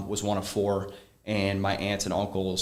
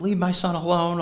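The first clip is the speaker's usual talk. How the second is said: mock, very high-pitched protective scream; 10 semitones higher, 5 dB louder than usual. Retelling how his mom screamed back at seniors taunting the parents, acting out her scream. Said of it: "pointing back and screaming at them".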